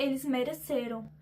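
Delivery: plain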